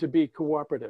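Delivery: plain reading voice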